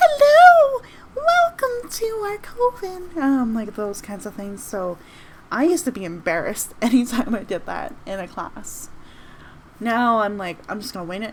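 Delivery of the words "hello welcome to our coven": very high, little squeaky fairy voice. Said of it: "little quiet, squeaky voices like".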